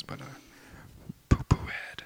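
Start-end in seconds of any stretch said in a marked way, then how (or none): 1.3-2.0 whispering. Saying a word so the listeners won't hear it: whispering. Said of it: "I'm gonna whisper this one".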